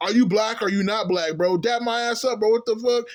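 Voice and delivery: heated, angry outburst, yelling. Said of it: "He started going off and shit".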